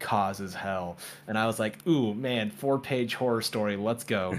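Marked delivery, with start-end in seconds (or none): none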